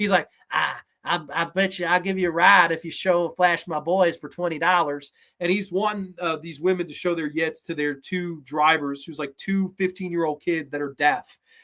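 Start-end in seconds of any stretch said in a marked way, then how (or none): 0.5-5.1 really bad country accent. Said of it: "giving this really bad country accent".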